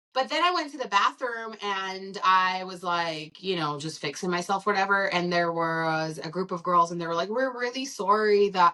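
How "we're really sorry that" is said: put-on Canadian-sounding accent. Retelling what a group of girls said in the bathroom: Canadian-sounding accent. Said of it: "That sounded so Canadian".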